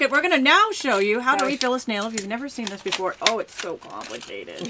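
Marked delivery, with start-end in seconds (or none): 3.2-4.7 slow, openly sarcastic, exasperated drawl. About to show viewers how to refill a snail, speaking sarcastically. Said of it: "I'm totally being sarcastic".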